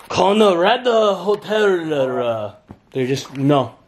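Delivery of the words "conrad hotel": put-on Korean accent, much higher. Retelling a moment from a trip, in a put-on Korean accent. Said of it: "tried in a Korean accent".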